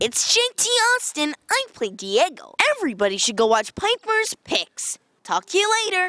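very high, lively, swooping put-on voice. Answering a request to say something in his Diego voice: Diego voice. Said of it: "Can you say something in your Diego voice?".

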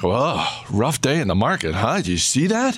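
play-acted, swooping sing-song with slight judgmental edge. Imitating non-investors quizzing investors about the market, mimicking a judgmental edge. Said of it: "that little judgmental edge in their voice".

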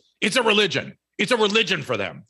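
put-on very high, loud, shrill, sharp snapping. Retelling what a woman snapped back at them, retelling a loud snapped retort. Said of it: "she just snapped back at me and she said something profound and loud".

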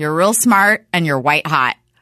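plain

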